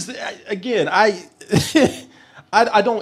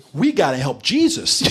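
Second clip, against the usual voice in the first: plain, ordinary-sounding male voice; 3 semitones lower than usual. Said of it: "that one voice that sounds like this".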